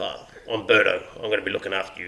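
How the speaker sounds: put-on very low, deep voice with German accent. Retelling meeting a man who introduces himself, doing Berto's deep German accent. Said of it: "in a real deep, like, accent, German accent".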